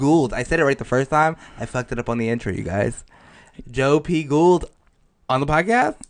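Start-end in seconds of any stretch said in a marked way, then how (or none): 3.7-5.9 rising, questioning tune on "podcast". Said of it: "you said it like it was a question".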